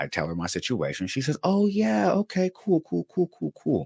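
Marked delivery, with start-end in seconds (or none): 1.4-3.9 put-on very nice voice, much higher, slower. Retelling a transferred call with a nice lady, imitating the nicest voice. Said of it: "And the nicest of voices".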